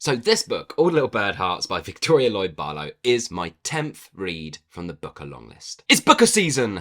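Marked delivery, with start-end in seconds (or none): 5.9-6.8 excited, high, loud hype shout. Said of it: "I really am running out of ways to do that".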